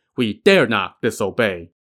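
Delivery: ordinary delivery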